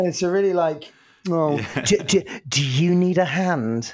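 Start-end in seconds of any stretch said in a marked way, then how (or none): 1.3-3.9 patronizing, smug, condescending voice. Voicing the Word paperclip offering help, patronizing smug paperclip voice. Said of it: "quite a smug looking paperclip".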